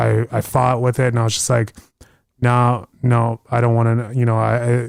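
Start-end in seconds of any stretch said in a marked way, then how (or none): none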